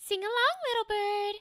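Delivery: gentle, soft voice placed in the nose. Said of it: "It's right in the nasal".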